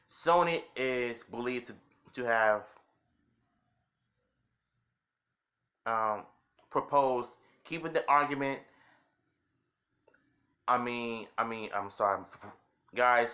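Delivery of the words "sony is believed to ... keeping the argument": stuttering, halting, stumbling, tripping over the words. Reading a news report aloud: stumbling, halting reading aloud. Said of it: "I'm so sorry for my bad reading".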